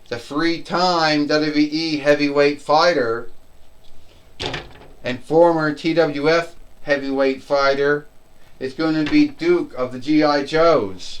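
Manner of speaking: usual speaking voice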